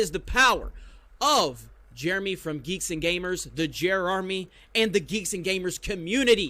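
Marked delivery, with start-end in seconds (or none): none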